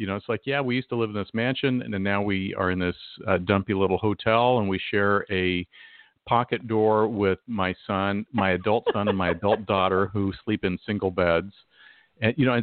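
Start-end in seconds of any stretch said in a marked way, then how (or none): none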